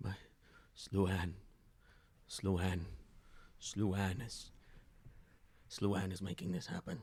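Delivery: soft mumbled mutter, half to themselves. A game master voices a figure who looks up as the party walks past, muttering. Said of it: "they kind of mutter".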